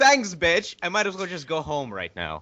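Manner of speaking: yelled with sarcasm.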